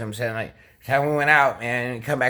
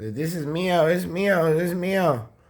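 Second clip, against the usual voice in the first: acted-out tearful sobbing, high and slow; 6 semitones higher than usual. Retelling how she grabbed the speaker's bag of clothes, imitating someone crying. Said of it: "start crying".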